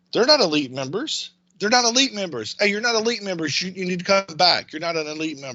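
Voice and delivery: high, insistent calling out, over and over. Retelling how a lady in the airport shouted at a family, imitating her shouting. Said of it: "starts shouting".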